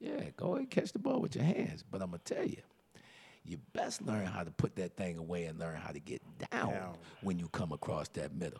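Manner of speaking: barely-there, very quiet, hushed half-whisper. Retelling what was said to receivers: retelling a half-whisper. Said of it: "I'm whispering to 'em like".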